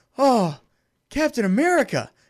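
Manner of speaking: high, starstruck, gushing fanboy freaking out. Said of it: "he's just freaking out the whole time".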